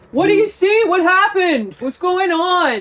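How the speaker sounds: high, drawn-out calling out. Calling to a friend down a dark tunnel in a game: yelling across a tunnel. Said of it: "as your friends are yelling things at you".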